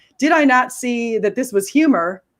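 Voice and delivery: ordinary talk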